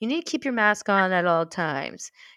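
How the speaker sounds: condescending, talking-down, strict rule-enforcer tone. Quoting someone's rules about masks at the pub: imitating a condescending tone. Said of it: "and very condescendingly, like a real dick".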